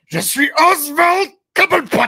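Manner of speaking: very high, loud character voice, pushed out. Doing an impression of the Penguin, Oswald Cobblepot. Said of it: "t'avais-tu la meilleure imitation".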